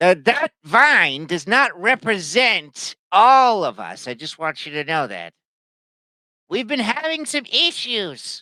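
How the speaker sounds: high-pitched, loud shout projected downward. Voicing an NPC calling down to the players: NPC shouting down. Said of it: "he shouts down at you and he says".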